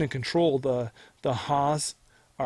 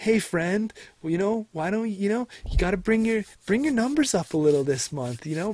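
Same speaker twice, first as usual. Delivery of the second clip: mocking, condescending put-on voice, higher; 6 semitones higher than usual. Imitating a boss at work who doesn't know names: imitating a patronizing boss. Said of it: "that, like, big boss at work".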